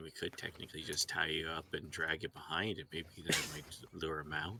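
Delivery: very quiet, hushed, under-the-breath aside. Making an aside about another character in the party: said very quietly. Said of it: "I say this very quietly".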